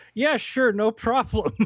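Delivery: very high, very loud, laughing through the words. Retelling the artist's reply to a request for the cover: imitating someone laughing while answering. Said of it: "laughed at me like".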